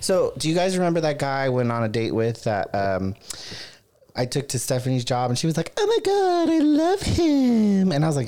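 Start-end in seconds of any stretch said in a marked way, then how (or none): 5.8-7.9 very high, very slow gush, "him" stretched out. Retelling what a friend said about a date: impersonation of Stephanie. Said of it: "That's a pretty good, that's a pretty good, uh, impersonation".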